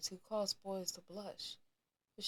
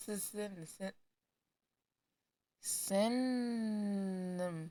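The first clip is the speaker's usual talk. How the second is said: very slow, tongue-tied, tripping over the first syllable. Reading a story aloud, stuck on a word: stumbling over a word. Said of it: "I can't talk".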